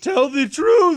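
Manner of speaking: very high, loud, shrill voice. Quoting a movie line to the others: Will Smith impression. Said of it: "That was a really good Will Smith impersonation".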